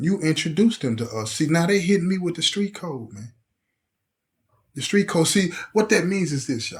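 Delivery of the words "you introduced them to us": ordinary delivery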